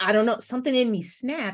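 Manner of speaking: ordinary talk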